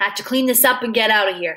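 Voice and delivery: plain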